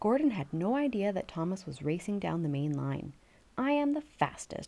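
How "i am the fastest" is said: proud, pleased-with-himself, smug, drawn-out delivery. A narrator reads a character talking to himself, proudly. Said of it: "Gordon said to himself proudly".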